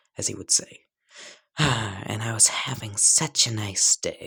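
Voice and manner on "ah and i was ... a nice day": grumpy, sour, irritated put-on character voice. Narrating a story, Izuku turns to Bakugo and replies; Izuku, scowling. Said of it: "just gain a scowl".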